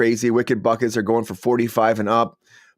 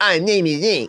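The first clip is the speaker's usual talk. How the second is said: put-on whiny voice, higher; 7 semitones higher than usual. Imitating Link from the animated series: whiny Link voice. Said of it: "He was kind of a whiny guy".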